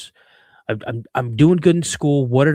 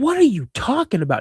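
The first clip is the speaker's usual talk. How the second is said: pitched-up, sassy, defiant talking back; 8 semitones higher than usual. Retelling an argument with a parent, acting out their own defensive reply to the accusing questions. Imitating talking back. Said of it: "kind of accusing me".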